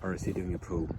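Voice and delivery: soft, low whisper. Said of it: "Why am I whispering?".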